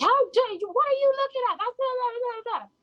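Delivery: put-on, shrill, very high, furious screaming. Retelling how an older woman shouted at the speaker: imitating a woman screaming. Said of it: "started absolutely screaming at me".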